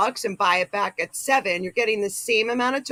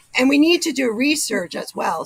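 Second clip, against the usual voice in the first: breaking voice, cracking and giving out; 4 semitones higher, 4 dB louder than usual. Speaking with co-hosts when the voice gives out; voice cracking. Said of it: "my voice went".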